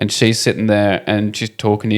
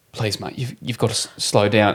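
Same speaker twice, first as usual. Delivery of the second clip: mock-pleading, acted pleading tone; 6 dB quieter than usual. Retelling a TV scene where a man pleads with another driver: imitating someone pleading. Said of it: "it's like pleading with him".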